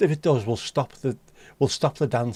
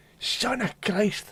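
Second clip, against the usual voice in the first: very high-pitched put-on Scottish accent; 9 semitones higher, 4 dB quieter than usual. Acting out what a labourer might shout after hitting his thumb, in a Scottish accent. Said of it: "In a Scottish accent, what?".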